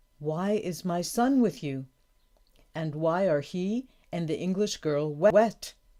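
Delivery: ordinary delivery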